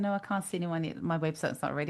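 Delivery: ordinary talk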